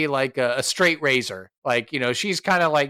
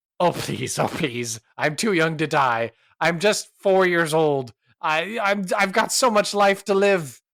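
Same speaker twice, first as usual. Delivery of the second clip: frightened, desperate pleading, terrified; 3 semitones higher than usual. Playing a drunk character facing an intimidation check, terrified. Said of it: "She's definitely like terrified now".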